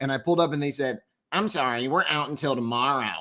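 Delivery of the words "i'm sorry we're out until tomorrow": dorky, nerdy put-on voice. Retelling what the McDonald's drive-through worker said: nerd voice. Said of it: "I love how you're doing the nerd voice for her".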